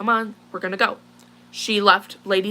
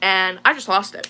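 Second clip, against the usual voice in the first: ordinary talk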